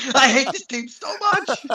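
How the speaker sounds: high, screaming rant.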